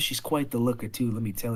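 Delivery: hushed voice. Voicing a character who leans in to share a secret: whispering. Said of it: "leans in and whispers".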